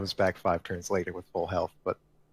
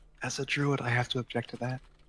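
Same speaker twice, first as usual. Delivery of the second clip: faint, feeble, weak voice, faraway and pitched up; 5 semitones higher than usual. A druid character calls out from far away: weak voice from far away. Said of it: "like in a weak voice".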